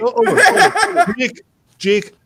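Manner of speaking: very high, slow, laughing swoon.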